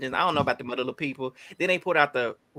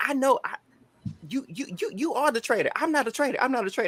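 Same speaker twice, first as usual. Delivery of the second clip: very high, stammering, stuttering, tripping over words; 10 semitones higher than usual. Imagining Sheree denying being a traitor: imitating Sheree stuttering. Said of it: "she gonna be just stuttering".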